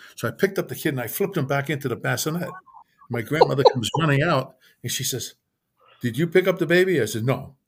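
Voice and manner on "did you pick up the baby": put-on Italian accent, much higher. Retelling a story, the speaker voices the grandmother running out asking about the baby: Italian accent. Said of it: "in an Italian accent".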